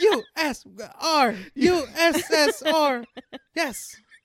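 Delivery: giddy, muddled cheer, very high, very slow, drawn out. Acting out the woman fleeing the scene: mock excited shouting. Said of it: "She's so excited".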